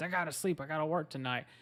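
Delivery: put-on irritated, angry yelling. Retelling how a tired father yelled at his kids: imitating a father yelling. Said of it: "he's yelling at his kids".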